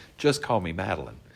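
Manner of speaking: ordinary talk, nothing marked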